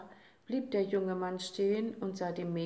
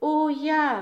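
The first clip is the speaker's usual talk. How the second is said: very loud, high-pitched, excited exclamation; 8 semitones higher, 10 dB louder than usual. The little Day answers his father's question, exclaimed. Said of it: "rief der kleine Tag".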